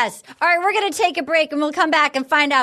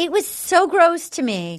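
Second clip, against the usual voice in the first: ordinary delivery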